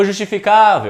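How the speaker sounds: high loud call of justificável, stressing cá.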